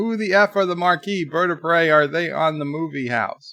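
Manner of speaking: usual speaking voice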